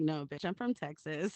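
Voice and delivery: angry, snapping tone, fired straight back. Retelling answering someone who asked if they're from New York: retelling an angry retort. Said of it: "when I get mad".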